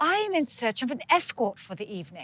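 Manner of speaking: put-on plummy British accent. Retelling a man who came into a property where the speaker worked: plummy british accent. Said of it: "beautiful, plummy British accent".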